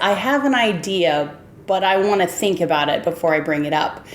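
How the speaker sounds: ordinary delivery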